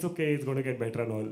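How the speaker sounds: ordinary talk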